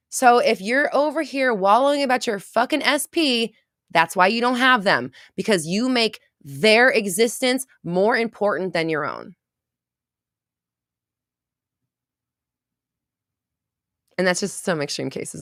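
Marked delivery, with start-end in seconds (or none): 0.1-9.3 fired-up, high, drawn-out yell. The speaker gets fired up while talking to listeners: yelling. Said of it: "I'm sorry for yelling".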